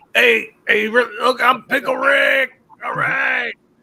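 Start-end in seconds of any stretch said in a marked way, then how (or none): 0.1-2.6 cartoon voice, much higher and louder. Speaker prompted about doing Pickle Rick: Pickle Rick voice. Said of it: "We all know that you like doing pickle Rick".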